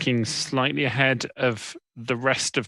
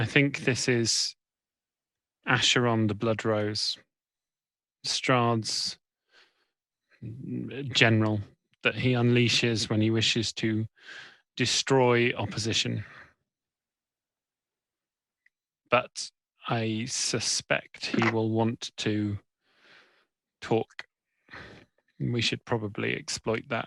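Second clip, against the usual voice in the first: low, quieter voice; 3 semitones lower, 5 dB quieter than usual. A character speaks to the others as an enemy general approaches, in a low voice. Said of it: "a low voice".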